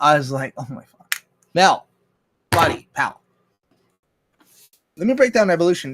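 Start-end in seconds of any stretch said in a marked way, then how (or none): 0.6-3.2 loud screaming. Recalling watching mel on tv and yelling back, retelling screaming at the tv. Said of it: "And I was screaming at my TV".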